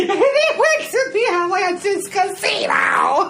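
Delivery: high, slow, uncontrollable laughing fit. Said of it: "us laughing uncontrollably".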